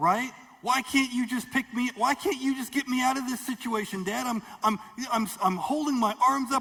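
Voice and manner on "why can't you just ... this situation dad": put-on frustrated, screaming child voice. The speaker voices a small child on the floor calling to her dad: frustrated child screaming. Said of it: "screaming and frustrated".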